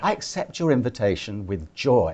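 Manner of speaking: normal talking voice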